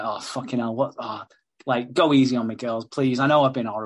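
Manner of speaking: put-on panicked, pleading voice. Retelling a panicked character begging two women: imitating someone panicking. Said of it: "he's really fucking panicking at this point".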